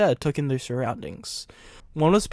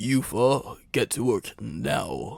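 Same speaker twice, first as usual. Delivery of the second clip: low growling voice; 4 semitones lower than usual. Stephen, not wanting to argue, orders the four to work, growling. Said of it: "he growled".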